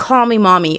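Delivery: ordinary delivery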